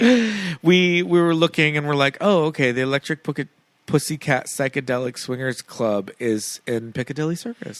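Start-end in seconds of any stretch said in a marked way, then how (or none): none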